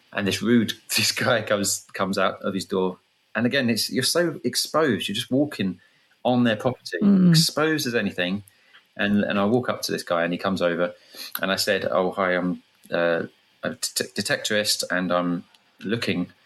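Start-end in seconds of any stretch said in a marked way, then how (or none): none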